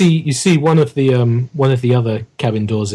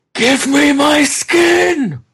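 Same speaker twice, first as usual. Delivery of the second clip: monster scream, much higher and louder; 3 dB louder than usual. Game master voices an unseen figure a few doors down, monster screaming. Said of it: "everyone else hears a scream".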